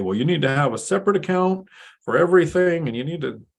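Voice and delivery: put-on older-generation voice. Imitating people their age or older, the speaker uses a mock boomer voice. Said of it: "I put on my boomer voice".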